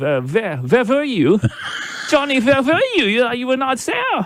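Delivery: high, mock German pirate accent.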